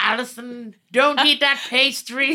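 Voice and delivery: very loud, high-pitched character voice, called out. Trading impressions in conversation, a Winston Churchill impression. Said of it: "That's my Winston Churchill".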